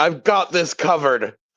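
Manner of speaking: put-on slurred, drunken-sounding voice. Playing Raziel, cutting someone off while leering at him: speaking drunkenly. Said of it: "Raziel cuts him off drunkenly".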